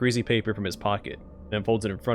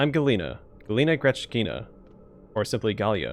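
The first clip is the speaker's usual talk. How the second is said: plain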